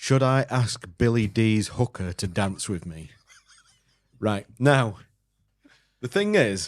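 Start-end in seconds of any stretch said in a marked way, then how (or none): none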